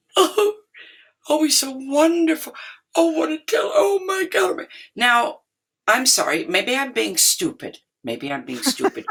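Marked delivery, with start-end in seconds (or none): 0.1-4.6 very high, weepy sobbing wail. Recalling two guests sobbing in the corner after the brother played, imitating someone sobbing. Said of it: "sobbing, going".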